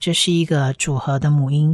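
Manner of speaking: usual speaking voice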